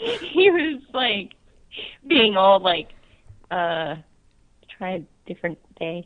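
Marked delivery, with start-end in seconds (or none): 4.8-6.1 put-on, soft, awkward, uneasy and uncomfortable tone. Retelling what the husband on the call said: imitating an uncomfortable husband. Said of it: "He was getting a little uncomfortable".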